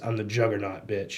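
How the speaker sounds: plain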